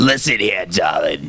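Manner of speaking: put-on gravelly, raspy old smoker lady voice. Asked to hear the character she does: raspy old smoker's voice. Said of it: "a lady that smoked like an old lady that smoked way too many cigarettes".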